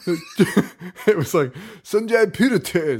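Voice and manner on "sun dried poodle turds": put-on high-pitched cartoon kid voice, rattled off quickly. A mom retelling a line he said to her, in a Timmy from South Park voice. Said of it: "very much like Timmy from South Park".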